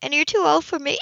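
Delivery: put-on, forced, insincere, fake-sounding delivery. Narrator reads a woman's added remark to a man, with a fake grin. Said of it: "she added with a fake grin".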